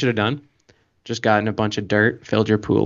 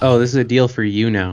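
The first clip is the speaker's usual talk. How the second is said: plain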